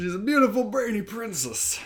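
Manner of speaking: high, creepy voice. Repeating a line about a character after being told it sounds creepy: sounding like Bill Cosby. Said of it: "you sound like Bill Cosby".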